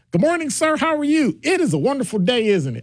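very high, polished, overly proper, extra-polite voice.

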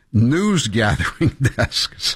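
slow, scornful, laughing mid-word through the words.

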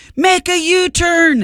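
yelling in a sat-nav voice. Imagining a GPS screaming at the driver: imitating a GPS screaming. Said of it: "My G P S would be screaming".

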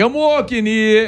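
put-on Italian man voice. Recalling a bit with an Italian guy: imitating an Italian guy. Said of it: "some Italian guy going".

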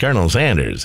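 plain

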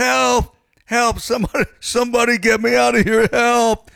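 shrill, very high screaming cries. Telling a joke about a man who falls in front of a lion, retelling a scream for help. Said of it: "He's screaming".

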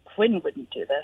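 low, barely voiced mutter under the breath. Retelling a line said at the end of a segment: imitating someone muttering under her breath. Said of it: "under her breath".

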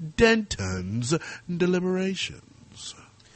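cool put-on voice. Host announcing the producer's new segment name: cool voice. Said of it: "I feel like I have to say it in this cool voice".

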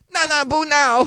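fake Chinese accent, very high pitch.

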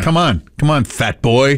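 ordinary talk

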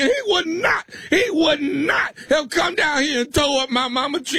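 fake crying, shouting through the tears. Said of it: "What the hell you crying for".

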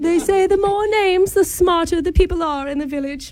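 put-on English accent. Phoning about a job interview to sound smart: put-on english accent. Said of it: "You're both English sounding".

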